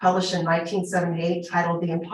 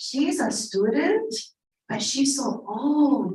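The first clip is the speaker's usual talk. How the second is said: stage whisper meant to carry; 6 semitones higher than usual. Retelling mothers whispering about the speaker, retelling a loud whisper. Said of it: "they were all like kind of whispering very loudly".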